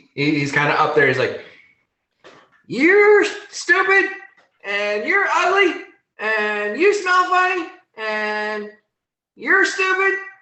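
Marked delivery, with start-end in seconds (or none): 2.7-10.2 put-on very high-pitched, childish, taunting voice. Voicing a rabbit boy up a hill insulting the party: childish tirade of insults. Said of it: "starts going into a tirade of, you know, childish insults".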